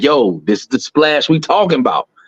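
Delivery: ordinary delivery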